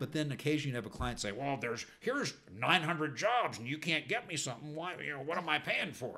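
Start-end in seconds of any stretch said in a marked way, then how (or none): 1.3-6.2 put-on grumbling, fed-up, put-out voice with Texas accent. Describing agents and clients, the speaker acts out a complaining client in a bad grumbly imitation. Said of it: "that client would be from Texas?".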